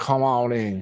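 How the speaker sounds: put-on American Southern accent. Game master voicing a man motioning the group into the room: southern accent. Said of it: "You hear the southern accent from him".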